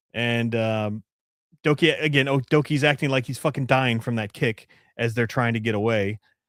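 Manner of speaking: ordinary talk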